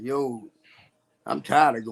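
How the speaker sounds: broken-down, tearful crying voice. Retelling breaking down as a grown man: imitating own past crying. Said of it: "grown man crying like".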